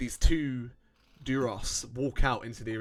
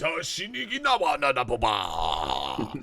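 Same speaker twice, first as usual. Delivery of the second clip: slow, swooping alien babble, "ba" drawn out; 3 dB louder than usual. Narrating a scene, the speaker voices a figure before a crowd, speaking Huttese. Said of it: "he speaks in Huttese".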